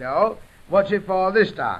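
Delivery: normal talking voice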